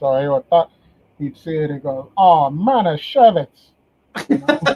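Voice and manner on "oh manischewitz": put-on loud, heavy Cuban accent, laid on thick. Retelling how the boss reacted to something off, in Frank Espinoza's thick Cuban accent. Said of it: "he had this thick Cuban accent".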